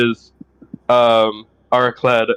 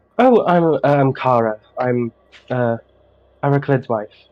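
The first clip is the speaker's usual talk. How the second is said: glowing, beaming, happy, unhurried cheerful voice. Voicing a beaming pregnant wife introducing herself: beaming, happy voice. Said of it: "She's beaming".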